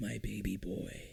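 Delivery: dropped low, soft and gravelly voice. In a group conversation, speaking in a Clint Eastwood voice. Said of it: "I'm doing my Clint Eastwood voice".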